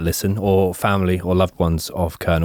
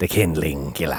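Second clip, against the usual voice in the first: put-on Scottish-accented speech, lower and quieter; 3 semitones lower, 5 dB quieter than usual. Saying a made-up nickname after being asked for it in a scottish accent: scottish accent. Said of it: "in a Scottish accent".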